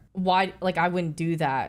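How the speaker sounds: ordinary talk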